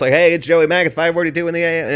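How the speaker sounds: rapid-fire delivery. Speaker shows the quick radio intro they plan to record, talking really fast. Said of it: "like just do it really fast".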